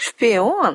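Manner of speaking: contemptuous snort. A girl reacts to an explanation about the vampire; contemptuous snort. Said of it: "презрительно фыркнула девушка".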